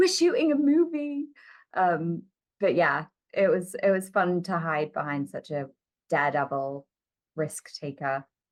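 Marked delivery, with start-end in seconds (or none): 0.0-1.3 thick put-on British accent, very high pitch. Recalling filming with a daredevil when things got out of hand, very British accent. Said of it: "put on my very British accent and be like".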